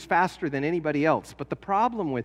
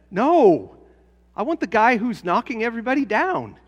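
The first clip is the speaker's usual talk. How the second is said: raised voice, loud and high; 6 semitones higher, 6 dB louder than usual. Recalling the coach talking to high school boys, retelling his raised voice. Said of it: "the coach raised his voice and said".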